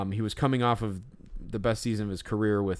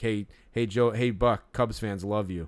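put-on yell. Retelling calling out from the front of the gallery: retelling a yell. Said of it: "I yelled".

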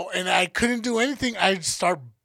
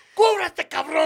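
put-on stern, shaming, scolding tone; 9 semitones higher than usual. Retelling how his mom shamed him for undressing, mock-scolding. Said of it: "Like shaming me for taking off my clothes".

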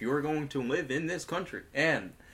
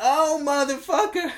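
belted out, high-pitched and forceful; 12 semitones higher, 9 dB louder than usual. Answering a request to do Samuel Jackson: Samuel Jackson impression. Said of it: "You wanna do Samuel Jackson?".

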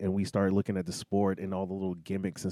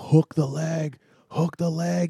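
mock scream, higher and louder; 9 semitones higher, 6 dB louder than usual. Retelling watching a fight on TV, imitating own past screaming. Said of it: "I was sitting there screaming at the T V".

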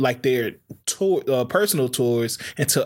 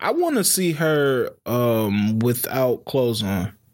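plain

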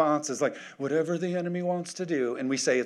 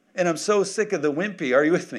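ordinary talk

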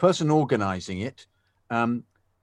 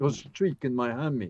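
put-on Dutch accent; 2 semitones higher than usual. A pundit imagining a player's line for his co-hosts: Ziyech impression, Dutch accent. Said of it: "I did my Dutch accent".

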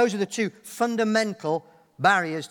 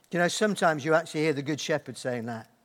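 ordinary talk, nothing marked

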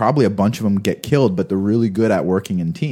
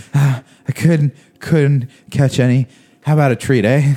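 put-on high, wheezy, breathless asthmatic dog voice; 5 semitones higher, 3 dB louder than usual. Acting out a French bulldog that failed to catch rats: put-on asthmatic dog voice. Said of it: "He's like the asthmatic dog".

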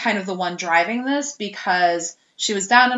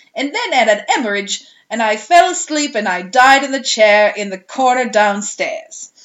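loud put-on London Cockney accent; 2 semitones higher, 5 dB louder than usual. Retelling what a little girl said while speaking as a dead man; cockney accent. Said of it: "like, Cockney accent".

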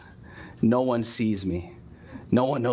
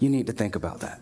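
soft, gentle whisper. Retelling what he says when he counsels us, a gentle whisper. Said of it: "He just whispered".

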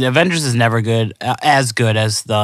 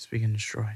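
soft, quiet, quieter voice; 13 dB quieter than usual. Answering the other speaker's catchphrase: said softly. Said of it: "I said it softly".

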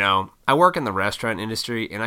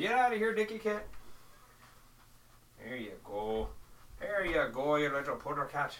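put-on Irish brogue, pitched up; 5 semitones higher, 11 dB quieter than usual. Shooing a cat away and talking to it: put-on Irish accent. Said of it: "I went into an Irish accent".

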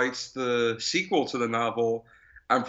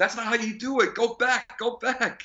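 put-on shrill kid yelling, very high; 11 semitones higher than usual. Recalling how every kid yelled at the TV during this movie; imitating a kid yelling at TV. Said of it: "yelling at the TV saying like".

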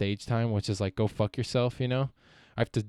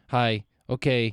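put-on curt, terse voice; 4 dB louder than usual. Describing how a little brother talks on the phone: imitating his curt phone talk. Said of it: "he just turns into, like".

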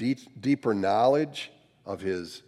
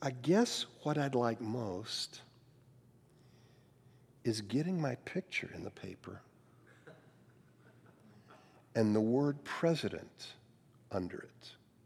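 smallest tiny voice, much quieter; 9 dB quieter than usual. Retelling a man's answer to a questioner, in the smallest voice possible. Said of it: "Palmer said in the smallest voice possible".

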